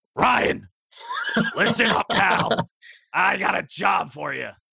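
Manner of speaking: rough, drawn-out, swooping wrestler-style voice. Acting out Vinnie Mac calling someone up, in a Hulk Hogan voice. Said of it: "I'm kinda making him sound like Hulk Hogan".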